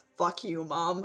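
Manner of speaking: low mutter under the breath, to oneself. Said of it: "mutters under her breath".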